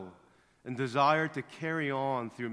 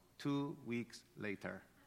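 hushed, very soft cartoon narrator voice; 3 semitones lower, 11 dB quieter than usual. Telling a racer's story, marking a jump in time: SpongeBob voice. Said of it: "I'll use my SpongeBob voice".

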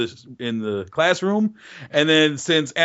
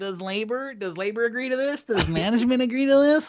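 put-on nasal voice, higher pitched; 7 semitones higher than usual. Asked by the other speaker to do your Alan voice, imitate him in a nasal Alan voice. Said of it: "I don't know if I can get nasal enough".

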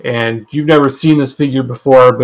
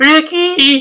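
put-on voice, cracking, higher pitched. Imitating a wife saying a friend's name: imitating a wife, voice cracking. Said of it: "my voice cracked".

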